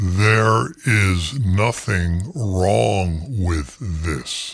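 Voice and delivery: slowed-down, slightly distorted low voice. Repeating a point to the audience in an altered voice: slowed-down, slightly distorted voice. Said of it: "let me say that again in a slowed down, slightly distorted voice".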